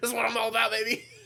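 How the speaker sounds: put-on high, fast, laughing hype, rattled off.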